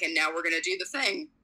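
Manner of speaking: normal talking voice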